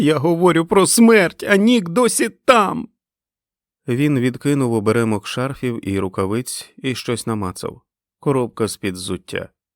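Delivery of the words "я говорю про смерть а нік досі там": very high, loud, piercing screamed cry. Clinging to him, she answers his question, screaming at him. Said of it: "закричала вона до нього".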